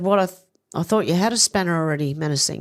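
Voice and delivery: ordinary talk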